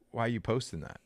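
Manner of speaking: ordinary delivery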